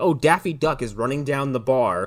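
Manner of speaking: plain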